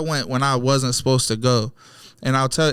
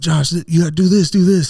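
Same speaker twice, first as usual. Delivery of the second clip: loud, high-pitched, acted-out yelling over each other; 5 semitones higher, 5 dB louder than usual. Retelling a car chase where passengers yelled at the driver: imitating people yelling. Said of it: "everybody's yelling at me".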